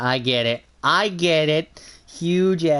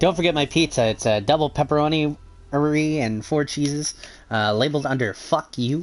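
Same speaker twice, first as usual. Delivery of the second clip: normal talking voice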